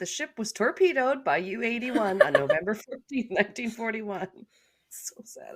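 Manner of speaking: speaking through laughter. Reading a quoted passage aloud, laughing while talking. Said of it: "I'm sorry I'm laughing so hard".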